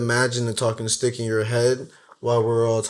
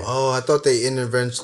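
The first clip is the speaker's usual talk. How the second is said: plain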